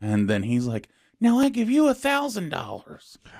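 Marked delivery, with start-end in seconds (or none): 1.2-3.2 grating, annoying, very high-pitched voice. Speaker acts out a man's line to someone who gave him money, imitating an annoying voice. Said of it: "he has a really annoying voice like this".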